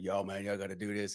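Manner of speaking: put-on big booming voice. Retelling how a friend's partner tells the guys what to do: imitating a big booming voice. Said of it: "a big old dude with a big booming voice".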